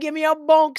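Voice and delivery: playful, exaggerated put-on Caribbean accent, done for laughs. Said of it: "doing a Caribbean accent".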